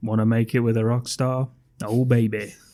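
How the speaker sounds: level monotone voice. Describing a scene where Jack hits on passing women, in Jack's monotone voice. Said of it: "Jack in his monotone voice says".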